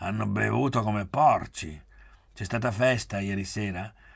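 ordinary delivery

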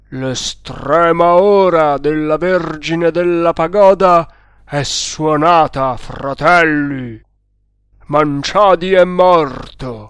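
thundering, booming voice ringing out. Narrator reads the stranglers' chief shouting to the men in the temple, thundering voice. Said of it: "gridò con voce tonante".

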